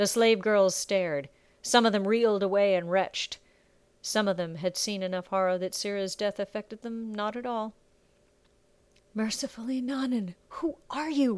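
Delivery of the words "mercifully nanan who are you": hushed, drawn-out, slow, high half-whisper. A girl asks the other who she is, half-whispered. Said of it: "Bella whispered".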